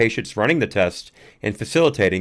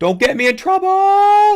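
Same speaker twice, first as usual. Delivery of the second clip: put-on very high, drawn-out girlish scream; 8 dB louder than usual. Retell the reaction of the guy in the video, imitating a scream in a girl voice. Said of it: "kind of a girl voice".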